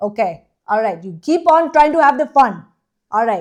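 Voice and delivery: put-on not very good Indian accent. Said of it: "not actually that good of an Indian accent".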